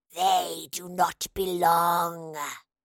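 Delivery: wet, gurgling, gargling monster voice. Reading a story aloud, a creature's voice answers her, gargling. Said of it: "the voice gargled".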